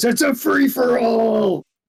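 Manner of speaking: very high, full-throated, top-of-the-lungs yell. Player speaking as their character during a fight, yelling at top of voice. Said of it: "yell at the top of his voice".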